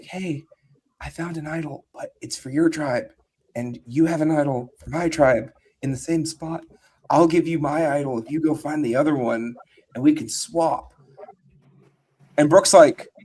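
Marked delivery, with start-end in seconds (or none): 0.0-10.9 put-on whispering. Retelling what one player said to another: imitating someone whispering. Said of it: "she kinda whispers over to Brooke".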